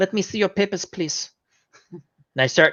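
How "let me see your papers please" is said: fake, put-on German accent voice. Retelling a moment of going into a put-on German accent. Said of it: "I go into my German accent".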